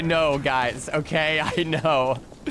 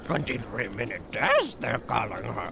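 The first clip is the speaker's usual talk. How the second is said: clumsy, badly done low creature voice that swoops awkwardly; 5 semitones lower, 5 dB quieter than usual. Repeating a chat message as Yoda: awful Yoda impression. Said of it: "that was an awful Yoda impression".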